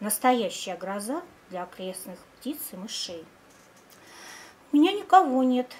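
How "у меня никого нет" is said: joyful very loud exclamation. A girl answers her friend about the kitten, joyfully exclaiming. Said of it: "радостно воскликнула Алёнка".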